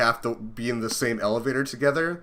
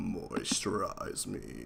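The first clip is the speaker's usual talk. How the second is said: very soft, put-on creepy whisper; 5 semitones lower, 12 dB quieter than usual. Offering to do the voice the other player likes: creepy put-on voice. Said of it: "do the voice you like".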